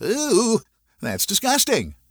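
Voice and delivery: high, giggly, laughing through the words. Dawn, unable to help herself as he jokes, answers him: giggling. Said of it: "Dawn began to giggle".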